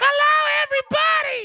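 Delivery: very high-pitched, loud delivery. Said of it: "she sounded like that".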